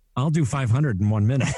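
usual speaking voice

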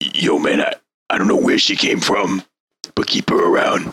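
voiced, conspiratorial stage whisper, acted. Voicing a character during a game, speaking to another: whispering in character. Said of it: "he also whispers".

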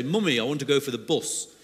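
put-on pleasant northern Yorkshire accent. Quoting a child born in Watford asking to go for the bus, Yorkshire accent. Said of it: "in a nice Yorkshire accent".

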